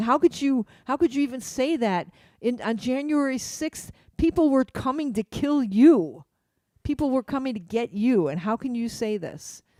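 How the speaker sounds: put-on light, mild yelling. Retelling how someone yelled at the Republicans: imitating someone yelling. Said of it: "somebody was yelling at them going".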